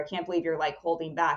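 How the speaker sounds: ordinary talk, nothing marked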